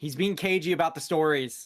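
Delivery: very loud, high yell carrying across distance. Playing a character, the speaker calls out from the ship, yelling. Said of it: "I'll yell from the ship".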